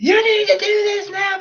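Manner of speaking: put-on very high, whiny, tantrum-like little-kid voice. Speaker acts out what the champion is made to say, in a mock high-pitched whine. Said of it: "like really high-pitched voice, like, whining like a little kid".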